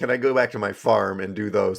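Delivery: plain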